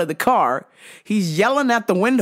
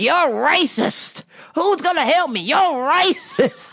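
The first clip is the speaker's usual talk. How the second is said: loud, high, put-on accusing yell; 7 semitones higher than usual. Mocking a person walking into a store, retelling them yelling out. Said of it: "walking in the store yelling out".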